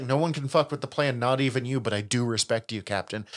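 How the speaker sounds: normal talking voice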